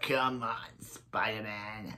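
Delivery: goblin villain voice. Describing a favorite villain portrayal to listeners, Willem Dafoe Goblin voice. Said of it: "I know I do a very good voice".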